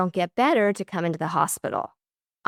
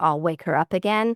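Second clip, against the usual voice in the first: plain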